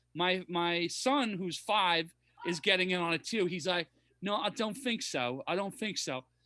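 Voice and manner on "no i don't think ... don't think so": soft British cartoon-kid accent. A parent acts out their five-year-old son joining in, Peppa Pig British accent. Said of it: "talking with British accents".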